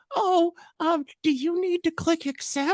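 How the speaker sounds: put-on very high-pitched elderly woman voice. Retelling how a guy tricks someone into clicking accept, in an old lady voice. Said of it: "old lady like voice changer thing".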